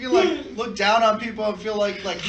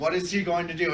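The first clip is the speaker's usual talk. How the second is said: normal talking voice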